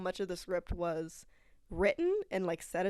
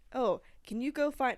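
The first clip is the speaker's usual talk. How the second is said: normal talking voice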